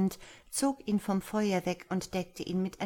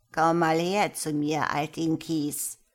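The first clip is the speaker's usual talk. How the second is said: put-on croaked, croaking old witch voice; 3 semitones lower, 5 dB louder than usual. Narrator reads the witch calling the frightened girl over: croaking witch. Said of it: "krächzte sie".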